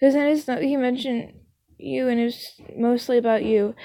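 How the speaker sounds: usual speaking voice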